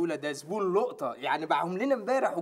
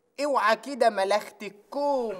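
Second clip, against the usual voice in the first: put-on Sa'idi Egyptian Arabic accent; 4 semitones higher, 4 dB louder than usual. A man asked to prove he can speak Sa'idi tries a put-on Sa'idi accent. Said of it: "بتعرف تتكلم صعيدي؟ طب وريني كده".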